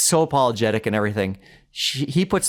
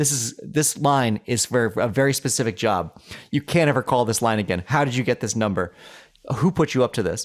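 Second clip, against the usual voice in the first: plain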